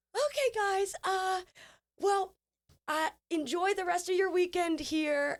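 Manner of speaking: very high, put-on, forced corporate politeness. Putting on a smile at midnight, put-on polite corporate tone. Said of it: "I literally put on corporate [name]".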